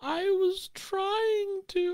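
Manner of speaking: play-acted, very high, slow, drawn-out sad crying voice. Retelling how his sad little face crumples, imitating a sad crying voice. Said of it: "in this like crying voice".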